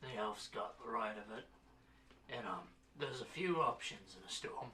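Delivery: put-on very hungover voice. Voicing a character who speaks to the group about a storm: very hungover voice. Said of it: "A very hungover Burks tell".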